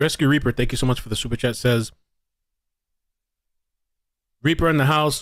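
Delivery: speaking with mouth full, chewing. Reading out a viewer's super chat, talking while chewing. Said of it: "Sorry, I gotta stop chewing".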